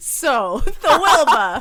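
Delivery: loud, high laughing in a mock Boston accent.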